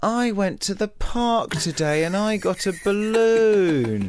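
very high, drawn-out, whiny complaining tone. Describing someone's voice, imitating his mock-whiny voice. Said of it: "He has a very sort of whiny voice as well".

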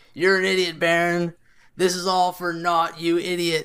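put-on drunk, laughing taunt. Retelling a drunk man in the crowd pushing guards off, imitating him drunk. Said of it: "clearly drunk".

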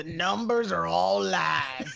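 gruff, slow, creaky made-up character voice. Reading a line in the voice imagined for this guy: put-on character voice. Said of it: "How I think this guy sounds".

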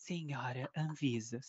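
silky smooth voice. Retelling a reply to critics on Twitter, in a velvety voice. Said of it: "com a voz bem avelundada".

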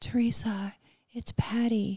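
mild, gentle voice. Speaker retells getting a phone call from Patty, imitating Patty's soft voice. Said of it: "Patty has a really soft voice".

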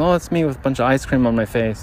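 ordinary talk

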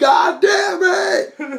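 put-on very high, sloppy, drunken holler. Speaker retells a drunk guy at graduation, imitating a drunk yelling. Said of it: "He just kept yelling".

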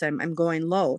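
normal talking voice

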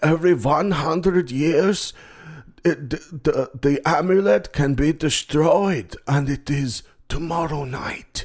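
put-on scary, high, slow old German man voice. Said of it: "this old scary German guy".

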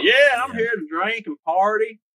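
thick put-on country drawl, very high and loud. Telling a friend how he should have talked, in a played-up country accent. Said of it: "really played up a country accent".

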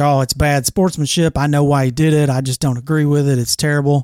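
normal talking voice

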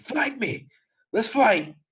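put-on wild, shrill, swooping scream at very high pitch. Complaining about a woman who keeps screaming, mimicking her screaming. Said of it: "just screaming".

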